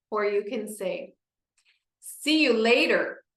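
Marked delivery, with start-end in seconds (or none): 2.0-3.1 loud, raised speaking voice. Showing how to say a practice word: loud voice. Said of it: "you're gonna say with your loud voice".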